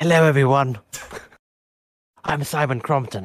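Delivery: sinister, evil-sounding villain voice. On a group call, pretending to be a member who isn't there: mock-evil voice as Simon Crompton. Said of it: "You're doing like an evil voice".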